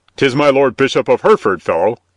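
fierce, harsh tone. Narrator reading a guard cutting in on a stubborn fellow, fierce. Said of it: "interposed one of the guards fiercely".

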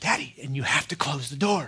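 hushed little half-whisper, no voice, close and low. Retelling a young daughter's bedtime request to close the door: imitating a child half-whispering. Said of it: "she whispers".

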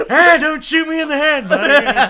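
very loud, high, belted character voice. After praise for the Abe Lincoln bit, joking again in an Abraham Lincoln impression. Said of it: "I do one impression".

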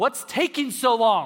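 put-on, loud, high yelled call. Walking into a CVS where his wife waits in line, retelling his own shout. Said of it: "I shout".

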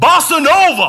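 very loud, high-pitched shouting. Retelling how a professor called out into a lecture hall: imitating someone shouting. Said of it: "he shouts out into the lecture hall".

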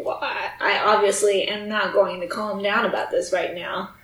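ordinary talk

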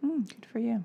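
dry, mocking, sarcastic tone. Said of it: "You're so sarcastic".

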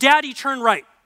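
put-on acted child voice, strong, firm, loud and insistent. Retelling a young daughter in the car, imitating her insisting. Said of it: "my daughter very strongly goes".

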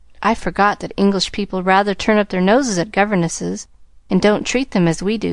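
ordinary delivery

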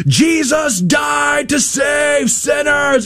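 high, slow shout like through a bullhorn.

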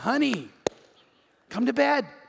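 eager, laughing, excited voice with swooping sing-song. Acting out Sarah's words to her husband: imitating Sarah laughing excitedly. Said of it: "She's laughing, going".

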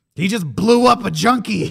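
loud, high, blunt cop voice.

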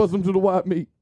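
rough-attempt comic voicing. Talking about a movie, doing a limited Bernie Mac impression. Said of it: "It's my limited Bernie Mac impression".

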